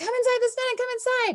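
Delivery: very high-pitched teacher's yell. The speaker shows how a teacher calls kids in from the playground, teacher yelling. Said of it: "Like if I was a teacher yelling at my kids".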